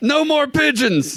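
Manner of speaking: very high, badly put-on German accent. Joking about a dictator's rage, in a bad put-on German accent. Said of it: "Maybe I need to quit with the German accents".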